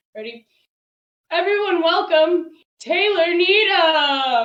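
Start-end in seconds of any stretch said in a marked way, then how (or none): 1.3-4.4 very loud, high emcee announcement voice. Pretending to introduce yourself from behind a curtain: pretending to be the introducer. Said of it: "then I'm gonna introduce myself".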